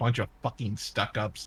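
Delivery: grumbled to oneself. A player's character mutters to themselves during a tabletop scene, muttered under breath. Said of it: "I just mutter under my breath".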